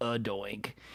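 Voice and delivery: very quiet, grudging, half-hearted, reluctant delivery. Retelling a broadcast after a field goal hit the upright: reluctant Cris Collinsworth imitation. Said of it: "Chris Collinsworth kind of reluctantly does it".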